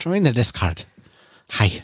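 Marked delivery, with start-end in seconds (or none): 0.0-0.8 put-on slight Irish accent. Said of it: "Sometimes I go a little Irish".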